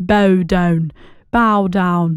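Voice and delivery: low, put-on English accent on "bow down". Repeating a phrase for viewers who missed it in Irish, English accent. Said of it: "in an English accent".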